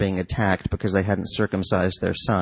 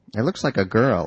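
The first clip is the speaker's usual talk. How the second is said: ordinary delivery, nothing marked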